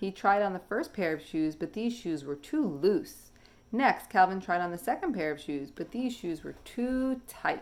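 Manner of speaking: ordinary delivery, nothing marked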